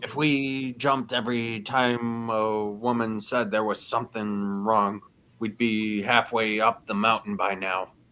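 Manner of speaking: hushed half-whisper, spoken in a put-on voice. Voicing a character who half-whispers a remark to a companion: half-whispering in character. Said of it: "Drogma whispers to Vendel".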